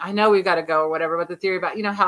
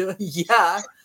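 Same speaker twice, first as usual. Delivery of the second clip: put-on Danish accent. Retelling what Danish listeners said about an accent: imitating a Danish accent. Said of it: "That's how they sound like in Denmark".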